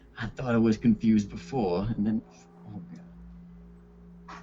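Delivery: hushed, soft muttered whisper under the breath. Voicing a character muttering to himself after a strange encounter: whispering under his breath. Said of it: "Leviathan whispers under his breath".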